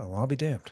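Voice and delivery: grave, no-joke, dead-serious deadpan delivery. Quoting a cartoon character's greatest line, said very seriously. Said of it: "he'll say it so serious".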